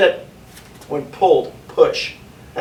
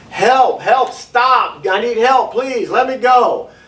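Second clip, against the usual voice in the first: drawn-out, slow, high screaming; 7 semitones higher than usual. Demonstrating how to escape an abduction, yelling for help. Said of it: "you're yelling and screaming".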